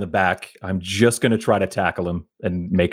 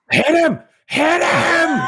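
very high, very slow, drawn-out top-of-lungs shout; 4 dB louder than usual. Gripping a struggling squire in a game, the player yells to allies, shouting at the top of lungs. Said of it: "Just shouting at the top of my lungs".

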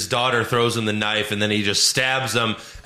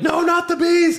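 play-acted very high, shrill screaming cry; 4 dB louder than usual. Acting out how he screamed about the bees, screamed. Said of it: "you never saw him scream".

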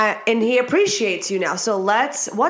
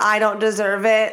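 normal talking voice

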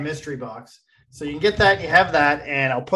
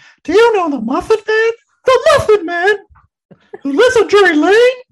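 very high, very loud, belted character voice; 9 dB louder than usual. Told to say it in the voice of the Gingerbread Man: Gingerbread Man voice. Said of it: "You have to say it in the voice of the... gingerbread man".

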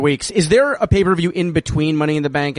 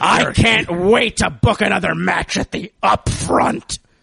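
put-on wrestling promoter voice, higher; 3 semitones higher than usual. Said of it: "do you wanna do that again in Vince voice?".

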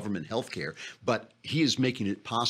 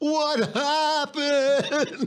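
high, slow, drawn-out mock bewildered lament. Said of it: "You have to read it in the right tone of voice".

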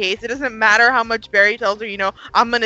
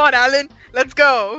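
slow, half-hearted, loosely faked British accent; 3 semitones higher, 3 dB louder than usual. Imitating Julian telling Alan to get going: half-assed British accent as Julian. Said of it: "I tried to do a British accent there".

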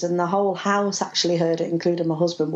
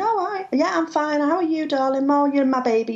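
silly little pet-like voice, pitched higher; 9 semitones higher than usual. Retelling talking to oneself after coming home: imitating own stupid voice. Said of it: "like you do in stupid voices".

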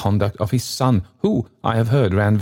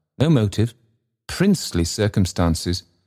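usual speaking voice

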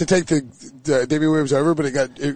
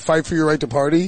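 usual speaking voice

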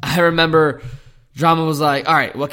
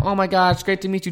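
put-on panicked voice, higher pitch; 5 semitones higher than usual. Retelling when Drama FaceTimed the speaker's mom, imitating mom freaking out. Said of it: "My mom's freaking out".

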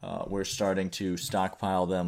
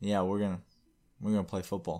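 mock flat, deadpan delivery. Retelling a football player's answer to reporters, imitating a deadpan reply. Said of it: "he just deadpan stares and says".

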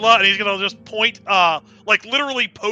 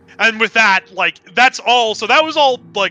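plain

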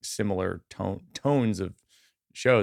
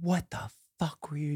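put-on yelling, higher pitch; 7 semitones higher, 8 dB quieter than usual. Retelling how the headliner reacted after an overlong set: imitating someone yelling. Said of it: "yelling at me".

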